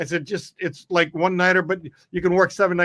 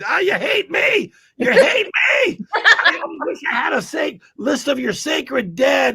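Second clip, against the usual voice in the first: put-on very high, ranting screech, screaming; 10 semitones higher than usual. Recalling a performer whose audience walked out, imitating someone screaming. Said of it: "he's like screaming that".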